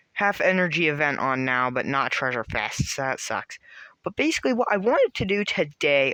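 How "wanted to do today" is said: voice cracking and breaking partway through the phrase. Explaining what they wanted to do today, voice cracking. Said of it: "God, that voice crack".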